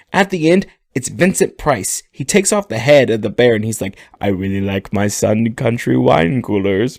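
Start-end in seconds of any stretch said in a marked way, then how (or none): 4.2-7.0 eerie, creepy horror-star voice. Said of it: "he's got this really odd voice".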